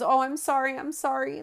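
high-pitched, tearless fake cry, put-on sobbing.

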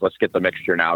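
ordinary talk, nothing marked

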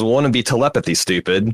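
usual speaking voice

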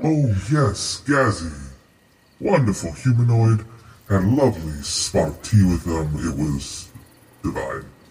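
otherworldly monster creature voice. Answering a player's question about meeting Gazagoth, star spawn voice. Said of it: "I was born of the Great Old One. I am what your people would call a star spawn".

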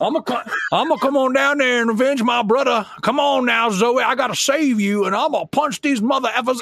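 put-on heavy Cajun accent. Acting out a video game character who punches mold, in a thick cajun accent. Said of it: "with 110% Cajun accent".

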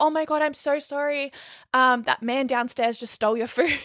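mock flustered, frantic, stressed-out, freaking out. Speaker retells the Uber driver coming up to them, imitating a stressed-out driver. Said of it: "comes up stressing, freaking out".

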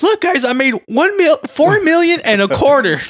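imitated squeaky voice. Quoting the man who lowballed a seller, imitating a squeaky voice. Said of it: "He has a squeaky voice".

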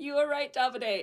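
plain

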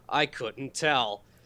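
as sarcastic as it gets, heavy, dripping. Reacting to a movie trivia fact: as sarcastically as possible. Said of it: "I'm gonna say this as sarcastically as possible".

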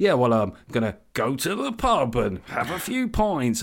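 arch, ironic delivery with a wink. Imitating how millennial men talk in an ironic voice: imitating men speaking like Alan Partridge. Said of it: "they speak like Alan Partridge".

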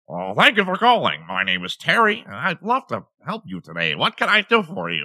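high, swooping, nerdy voice.

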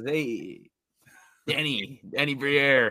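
high, drawn-out, slow and bold dealmaker voice. Acting out a hockey GM calling another GM: Chevy impression. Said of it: "That's a good Chevy impression".

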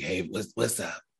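soft, raspy croaking voice. Showing how TT sounds when hungover, imitating TT's raspy hangover voice. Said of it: "it's like real raspy".

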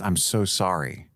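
sincere, weighty, very earnest and heartfelt. Retelling how a film character apologizes: imitating an earnest apology. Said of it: "very earnestly says".

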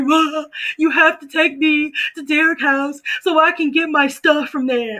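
high, tearful sobbing, ugly crying. Retelling asking mom for a ride after a breakup, imitating an ugly cry. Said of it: "like that ugly cry".

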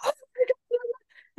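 put-on very high, thrilled, excited shriek. Retelling seeing a name come up while her husband slept, re-enacting a scream. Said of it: "And I screamed".

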